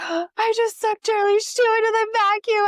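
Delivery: put-on very high, loud, dramatically shocked gasp. Retelling finding the shoe sucked into the vacuum: retelling a shocked gasp. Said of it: "like a shocked gasp".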